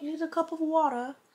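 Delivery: clumsy put-on British accent. Asked to try a British accent, the speaker attempts one. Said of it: "try to have a British accent".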